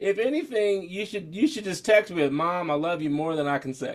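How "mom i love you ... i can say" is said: usual speaking voice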